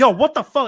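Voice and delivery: sudden, high, startled scream of alarm. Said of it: "I scream like".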